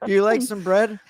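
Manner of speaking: Canadian accent, pitched very high. Joking with the other speakers: good canadian accent. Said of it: "that was a good Canadian accent".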